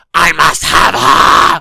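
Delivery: raw, very loud, drawn-out, rough scream. Acting out King Arthur leaning over to one of the knights, imitating King Arthur screaming. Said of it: "He screams".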